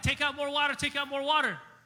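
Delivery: high, urgent shout.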